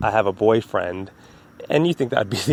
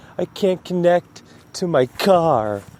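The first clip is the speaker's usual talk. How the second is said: mock upset woman, higher and slower; 8 semitones higher than usual. Retelling what a frustrated woman at her car said, imitating her upset. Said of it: "she's all like so upset".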